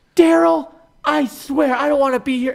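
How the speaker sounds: very high, furious, really mad snap. Retelling what a hypnotized coworker snapped at her husband: imitating someone really mad. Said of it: "really mad".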